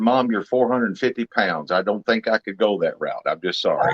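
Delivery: ordinary talk, nothing marked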